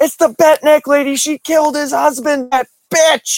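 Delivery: put-on, very high, freaked-out scream. Retelling how his wife reacted to a TV episode, imitating her screaming. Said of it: "my wife screams at the screen".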